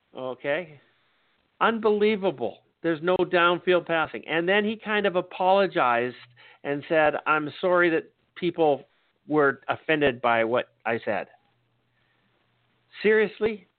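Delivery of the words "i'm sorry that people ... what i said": plain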